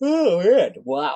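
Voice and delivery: talking through a yawn. Host introducing the episode, speaking through a yawn. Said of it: "As I yawn, excuse me".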